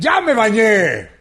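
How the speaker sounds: slow yelling. Telling the worst joke you can, the opening line shouting. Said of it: "¿Y por qué gritas?".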